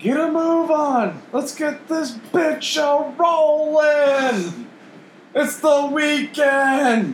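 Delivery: mock, very high-pitched, very slow, drawn-out holler. Recounting a van driver cutting off a lady, the speaker reenacts it: retelling a yell out the window. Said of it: "I'm just yelling out the window".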